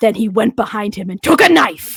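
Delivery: overly excited, eager documentary narration. Imitating the Forensic Files announcer describing a murder: overly excited narrator. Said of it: "he sounds a little too excited about it".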